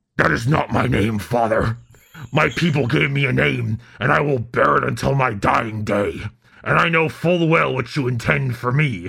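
failed heroic voice, sounding like a pirate. Reading a quoted character's reply to the Emperor, in a pirate-sounding Batman attempt. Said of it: "that sounded more like a pirate than Batman".

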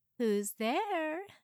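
teasing, playful, high, called-out voice. Narrator reads Shanda answering a knock at her hotel room door: called playfully. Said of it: "Shanda called playfully".

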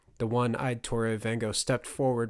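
plain reading voice

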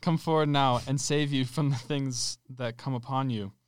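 ordinary talk, nothing marked

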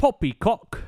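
very high-pitched, put-on posh British accent. Describing a street performer dressed like a British guard, quoting him: mock British accent. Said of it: "And he's just being like".

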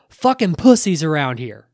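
acted-out shout, put-on yelling. Retelling how a man stepped away from the truck and yelled, imitating his yell. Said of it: "he just yells".

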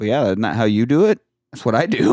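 mock deadpan delivery. Recounting a woman's reply to the speaker's remark, retelling a deadpan reply. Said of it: "she just looks up at me, deadpan".

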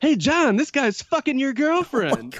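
very high, shrill, swooping cartoon yell. Retelling a man who interrupted to shout at his friend John: yelling in Roger Rabbit voice. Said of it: "yells out in kind of like a Roger Rabbit voice".

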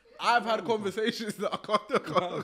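high, loud laughing, too hard to speak.

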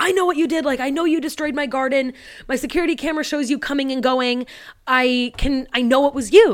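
play-acted furious, screaming voice. Retelling how Mister Foster screams through the window: imitating Mister Foster screaming.

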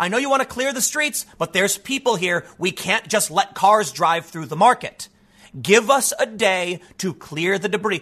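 ordinary delivery

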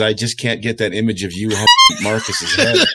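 mocking, amused, swooping words broken up by laughter. Retelling what someone said when they met at a contest, imitating Brett laughing while talking. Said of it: "he just starts laughing, and he goes".

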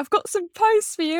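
high calling-out shout. Retelling how he called out about post he couldn't fit: imitating someone shouting. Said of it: "And then he shouts".

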